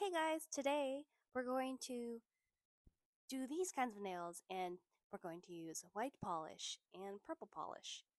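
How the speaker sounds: bubbly, loud, animated excited announcer delivery. After comments called her voice boring, showing her new nail-video voice: put-on animated, excited voice. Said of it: "I started to talk in like a very animated, excited voice".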